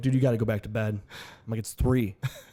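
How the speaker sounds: ordinary talk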